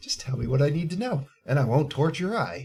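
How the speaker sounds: mock-calm, menacing put-on voice. Describing a movie close-up, acting out her line as a retold calm threat. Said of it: "it was nice and calm".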